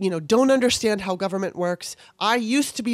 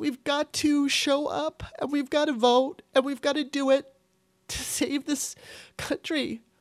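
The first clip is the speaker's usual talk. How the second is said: high voice, crying through the words; 6 semitones higher, 4 dB quieter than usual. A speaker scared for friends and mother, crying while talking. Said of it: "I'm not really sorry for crying".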